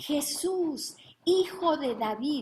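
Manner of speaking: very slow, loud, high, drawn-out shouting cry. Speaker retelling the Bible story of blind Bartimeo, acting out his shout. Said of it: "¿qué empieza a gritar?".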